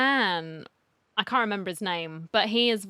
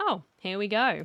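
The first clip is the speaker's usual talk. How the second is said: normal talking voice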